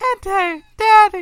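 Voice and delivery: put-on high, loud little-girl wail. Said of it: "she was like".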